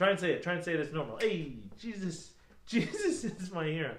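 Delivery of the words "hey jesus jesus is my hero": very slow, drawn-out delivery, every word dragged. Showing how to say the line casually: Fonzie voice. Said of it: "I did a Fonzie there".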